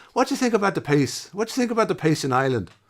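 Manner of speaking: put-on very high old Irish fella. Retelling what an old Irishman at a sound check asked: imitating a cliche old Irishman. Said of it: "Typical cliche, um, Irishman".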